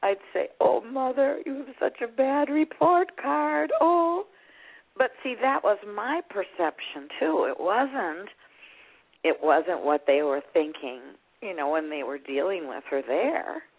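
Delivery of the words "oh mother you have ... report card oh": crying, tearful voice, pitched way up. Retelling opening mother's care report and crying: retelling own crying. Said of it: "I'd just start crying".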